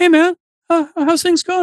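very high, mild, friendly, easygoing, unassuming. Retelling a stranger in a crowd striking up a conversation, imitating an unassuming voice. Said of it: "He had this really unassuming voice".

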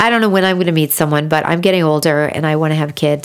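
ordinary talk

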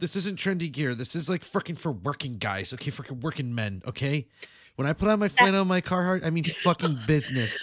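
worked-up, loud, high-pitched ranting. Reenacting a real live stream, scolding people for wearing Carhartt: imitating a live streamer's rant. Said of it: "he's reenacting a real live stream".

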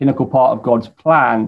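normal talking voice

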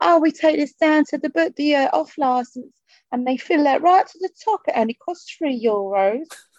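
put-on high, proper old-school East End London accent. Retelling her answer about where the brandy came from, imitating an old-school East End accent. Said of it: "she was like proper old school East End".

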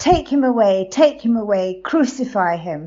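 loud, angry, demanding crowd-like outcry.

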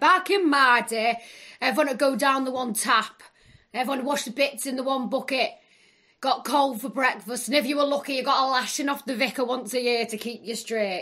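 put-on Yorkshire accent. Joking that losing teeth makes the speaker sound Yorkshire, then a mock Yorkshire accent. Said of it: "I sound like one of them Yorkshire people".

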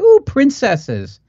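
put-on shrill, very high, excited little-girl squeal. Recalling voices heard in a former Toys R Us, imitating a little girl's squeal. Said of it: "I heard some little girl just squeal out like".

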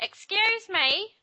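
very high, loud, shrill hollering yell. Retelling a wrestling segment, imitating Vickie Guerrero's "Excuse me". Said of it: "You say that well".

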